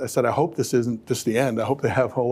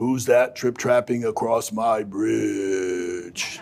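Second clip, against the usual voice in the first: slow storybook troll voice, "bridge" drawn out. Retelling reading Three Billy Goats Gruff aloud at bedtime: troll voice. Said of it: "I would play the voice of the troll".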